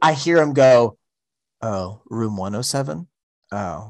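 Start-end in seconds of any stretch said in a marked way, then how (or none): 1.6-3.9 hushed, very low, quiet voice. Retelling how a man realized he was wrong, imitating someone speaking quietly. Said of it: "he said it real quiet".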